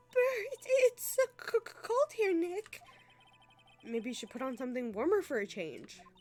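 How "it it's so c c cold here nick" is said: loud chattering teeth, higher and louder. In a scene, a woman speaks to Nick during cold training, teeth chattering. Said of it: "Her teeth are chattering so loudly".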